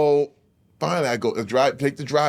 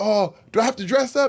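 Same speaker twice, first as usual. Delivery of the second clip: put-on panicked freaking out, pitched higher; 7 semitones higher than usual. Retelling asking whether to dress up for a callback: imitating own panicked self. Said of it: "So I'm freaking out".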